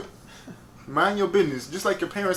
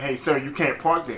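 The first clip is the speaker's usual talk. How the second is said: ordinary talk, nothing marked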